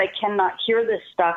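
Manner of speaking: ordinary talk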